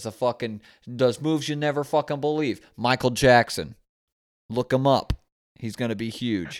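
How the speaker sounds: bad put-on Boston accent coming out Canadian. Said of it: "more like Canadian out of that accent than Boston".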